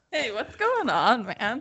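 clumsy standup comedian voice with sing-song delivery. Joking about ranting about neighbors, speaker tries a bad Jerry Seinfeld impression. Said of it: "You might have done a better Seinfeld".

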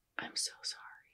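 soft whisper, very close to the ear. Retelling how a girl whispered an apology in someone's ear: imitating a whisper. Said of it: "whispered it in, in her ear".

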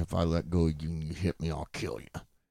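put-on whisper. Retelling a scuffle in a parking lot, imitating a whisper. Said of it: "we're whispering at each other".

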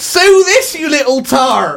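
put-on thick, broad West Country accent, very high pitch. Reading out a listener's story, the imposter grabs the narrator: broad West Country accent. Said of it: "saying in a broad West Country accent".

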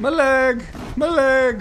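put-on high, loud cry in an Irish accent. Acting out someone whose leg was just blown off, in an Irish accent. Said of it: "I don't know why they sound Irish".

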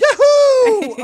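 very high, very loud, drawn-out whoop. Retelling an actor cheering after the Death Star blows up: imitating Billy Dee Williams. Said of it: "he's like".

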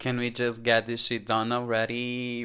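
ordinary delivery

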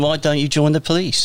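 put-on London accent. Retelling what a retired police officer said in the pub, in Charlie Alsop's London accent. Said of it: "in his London accent".

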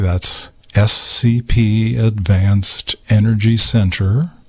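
slow, deliberate, carefully spaced, unhurried delivery. Radio host repeating a long sponsor web address, saying it more slowly. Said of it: "Let me say that again more slowly".

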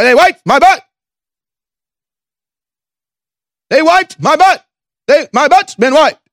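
very high-pitched, mocking voice. Mocking a clip that was just played: Joe Biden impression. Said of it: "that's Joe Biden".

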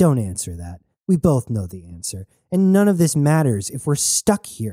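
plain

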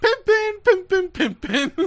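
put-on high-pitched, slow drawling voice. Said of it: "Cat Williams grabs the pliers, like".

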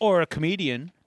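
ordinary talk

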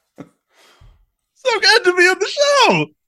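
very high, very slow, loud, squeaky puppet-like voice. Imitating a comedian talking like a Muppet: Bobcat Goldthwait impression. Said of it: "He kinda talks like a Muppet".

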